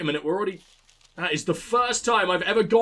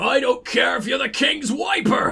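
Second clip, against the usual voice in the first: slow, clumsy, bad put-on Irish accent; 4 semitones higher, 3 dB louder than usual. Redoing the line the way an actual dwarven voice would, in a bad irish accent. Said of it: "I'm not good at an Irish accent".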